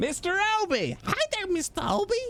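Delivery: deliberately awful, very high, swooping sing-song voice. Greeting Mister Albie in a terrible Harley impression. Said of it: "That was my terrible, uh, Harley impression".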